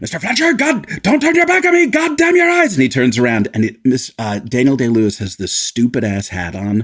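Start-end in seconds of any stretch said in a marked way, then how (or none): 0.0-2.7 put-on yelling naval captain voice, very high, flipped-out. Retelling the captain yelling at the first mate: imitating Anthony Hopkins yelling. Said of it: "he yells at him, he's like".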